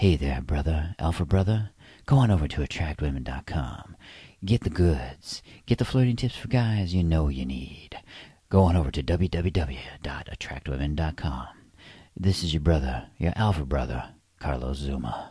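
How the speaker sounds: alluring, seductive, come-hither put-on voice. Host promoting his website to male listeners, putting on a seductive voice. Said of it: "Let me put on my seductive voice".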